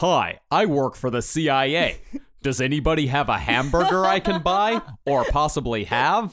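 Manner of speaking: clumsy, bad put-on American accent from British speaker. Mocking British people trying to do an American accent: imitating a Brit's American accent. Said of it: "British person tries to do an American accent".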